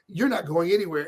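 ordinary talk

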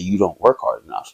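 put-on deadpan delivery. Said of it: "look them dead in their eyes and say".

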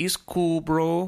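fake Mexican accent, casual. Pitching a scene, a speaker voices the sister's reply to her brother: Mexican accent. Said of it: "Do some more of that accent".

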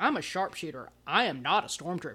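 play-acted furious, indignant angry protest, pride stung. Retelling how the ex-stormtrooper reacted to being called one: imitating an angry character. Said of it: "he got super mad about it".

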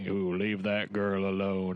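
expressionless, deadpan, flat, level monotone. Imitating a film character said to have no personality: flat monotone. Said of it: "he's got that monotone".

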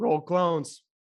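voice breaking and cracking on "roll clones". Host closing out the episode with the sign-off, voice cracking. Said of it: "Did my voice just crack".

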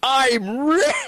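shrill, very high-pitched screamed-out cry. Playing a character who finds platinum coins in a library: screaming in character. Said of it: "as I scream it out in the library".

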